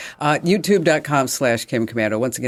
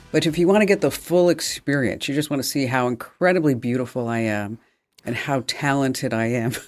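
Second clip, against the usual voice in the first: ordinary talk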